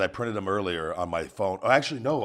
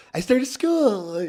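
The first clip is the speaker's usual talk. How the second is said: put-on very high, squeaky little-kid baby voice; 5 dB louder than usual. Imitating how the other speaker said she started school: imitating Melissa's baby voice. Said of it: "you said it the same exact way before".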